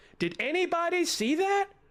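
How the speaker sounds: very high-pitched, startled holler. Retelling calling out from a balcony to anyone outside: imitating own past yell. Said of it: "I literally yelled out".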